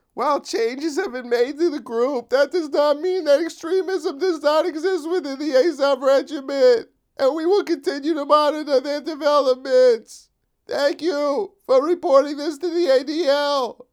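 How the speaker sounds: very high, grating, ear-scraping put-on voice. Reading out an organization's reply in an ear-grating mock voice. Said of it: "I'm sorry if that hurt your ears".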